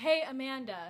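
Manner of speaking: play-acted sloppy, slurred drunk voice. Retelling a story, the speaker turns to a friend: put-on drunk voice. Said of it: "in my drunk voice".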